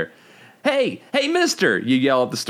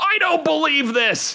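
very high, choked, strangled, gasping voice; 14 semitones higher than usual. In a second-person story, you react to the robot in a strangled gasp. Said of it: "you gasp in a strangled voice".

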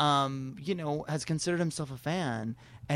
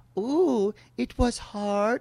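put-on condescending talk-show host voice, higher and louder; 7 semitones higher, 5 dB louder than usual. Retelling how an interviewer talked down to a guest: imitating Oprah talking down.

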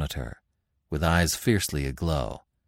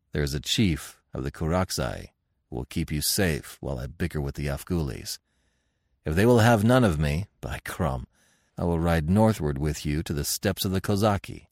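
plain reading voice

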